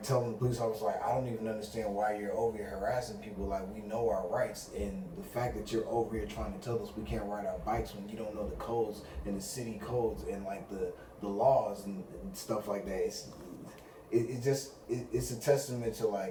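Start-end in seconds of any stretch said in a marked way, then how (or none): none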